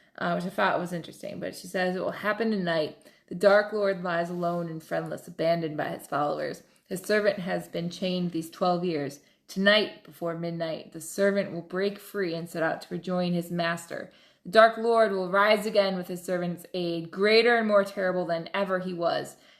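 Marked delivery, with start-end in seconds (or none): none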